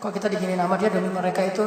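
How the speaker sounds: low, hushed, sad, complaining tone.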